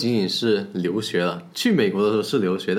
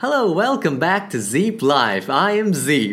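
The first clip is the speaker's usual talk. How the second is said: put-on American accent, much higher; 8 semitones higher, 4 dB louder than usual. Host greeting viewers at the start of the show: put-on american accent. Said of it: "我不知道這個美式口音對不對".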